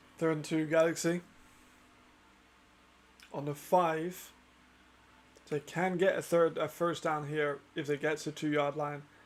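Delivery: very tired, worn-out voice. Calling a football game's play-by-play with a very tired voice. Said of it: "my fucking voice is so tired".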